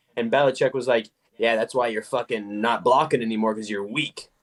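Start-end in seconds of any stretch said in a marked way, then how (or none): 1.4-4.3 grumbling, muttered under the breath, barely voiced. Retelling what a coach said to a player: imitating someone muttering under breath. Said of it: "under his breath and shit".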